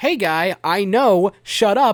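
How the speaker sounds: broken English, loud and slow. Retelling a fight after a sarcastic remark: Georgiev in broken English. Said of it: "I assume in broken English".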